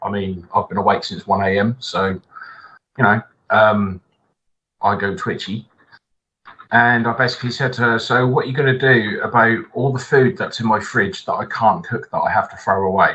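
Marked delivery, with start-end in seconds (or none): none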